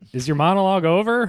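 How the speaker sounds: mock high-pitched yell, as if from far away. Retelling what she yelled out after he went outside: imitating someone yelling. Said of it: "she yelled out".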